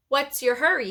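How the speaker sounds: nasty, mean delivery. Reading a story aloud, voicing a character blocking a girl's way: nasty voice. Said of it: "he asked in a nasty voice".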